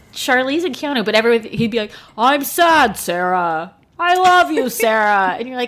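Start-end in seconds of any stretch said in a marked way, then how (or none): 2.2-5.4 very slow, flat, emotionless delivery. Imitating a movie line in a Keanu Reeves voice, no emotion. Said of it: "No emotion".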